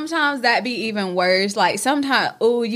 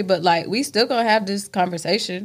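usual speaking voice

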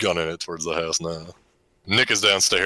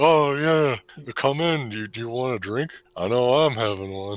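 put-on dazed, out-of-it, high, groggy, half-awake voice; 6 semitones higher than usual. Retelling a scene where a character answers the door: imitating someone half awake. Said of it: "He sounds like he's half awake".

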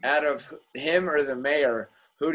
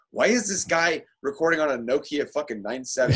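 usual speaking voice

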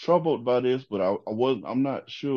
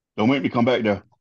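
stern, raised scolding voice; 5 dB louder than usual. Imitating an airplane pilot scolding passengers: imitating a road-trip dad scolding. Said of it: "talk to me like my daddy on a road trip".

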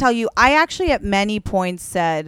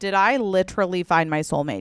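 ordinary talk

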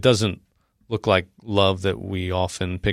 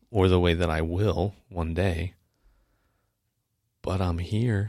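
dramatic dramatized delivery; 3 dB quieter than usual. Retelling a Bible scene, answering Jesus: dramatic retelling of a quote. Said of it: "I'm doing a dramatic retelling".

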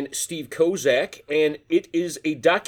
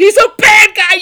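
put-on kid's yell, much higher, louder; 14 dB louder than usual. Recalling watching tv at eight, the speaker re-enacts yelling at the screen. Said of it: "was yelling at the TV".

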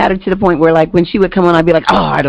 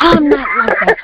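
offended, heated and angry, pitched up; 8 semitones higher than usual. Retelling how people named Stephen reply, imitating someone angry. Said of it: "they get really mad".

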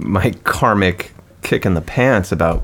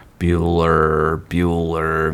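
dull, flat, droning schoolteacher monotone; 3 semitones lower than usual. Recalling an old science teacher's way of talking, droning teacher voice. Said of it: "Talked in the droning".

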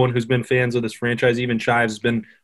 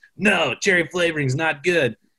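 put-on woman's voice, pitched up; 5 semitones higher than usual. Retelling a complaint about cherry flavored soda: Allie impression. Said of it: "that's a great Allie impression".

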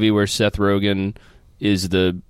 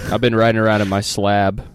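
normal talking voice

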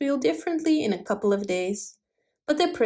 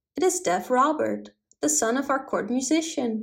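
ordinary delivery

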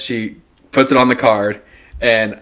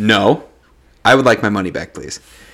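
mock-firm, angry tone. Retelling asking the lady at the counter for money back, a firm demand. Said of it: "But I'm very firm".

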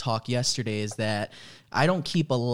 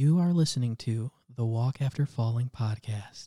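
very quiet delivery. Trying out a version of the podcast intro: said very quietly. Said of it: "you said it so quiet".

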